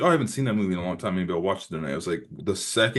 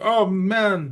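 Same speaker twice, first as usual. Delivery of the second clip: loud, very high, shrill fake Jamaican accent; 12 semitones higher, 6 dB louder than usual. Retelling a wounded movie character's line: Mario Van Peebles's fake Jamaican accent. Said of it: "I'm doing an impression of a Mexican person doing a Jamaican accent".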